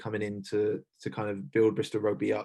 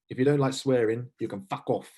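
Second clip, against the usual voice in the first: heavy, strong put-on South African accent; 3 semitones higher, 4 dB louder than usual. Retelling a new leader's first talk to the squad and staff, in a strong south african accent. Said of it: "in a strong South African accent".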